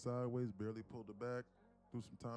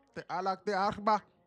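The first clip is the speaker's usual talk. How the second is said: higher, louder yelling of made-up Arabic-sounding gibberish; 9 semitones higher, 14 dB louder than usual. Answering a scam call recording, pretending: screaming fake Arabic gibberish. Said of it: "just screaming shit in Arabic".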